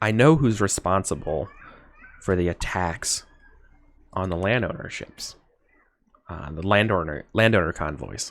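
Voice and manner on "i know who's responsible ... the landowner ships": secretive stage half-whisper, as into an ear. In a role-play, leaning in close to the listener: half-whispering into the ear. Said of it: "like I'm whispering into your ear".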